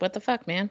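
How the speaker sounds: irritated, griping housecat voice. Voicing the cat as it meows at the speaker: imitating a grumpy cat. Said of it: "He's like".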